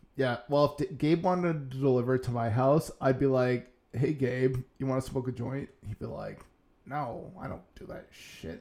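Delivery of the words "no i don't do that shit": whispery, breathy put-on voice, half under breath. Imagining Gabe turning down a joint: Gabe voice. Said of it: "I'm not sure why you're using that voice".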